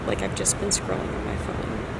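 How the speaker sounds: soft, hushed voice.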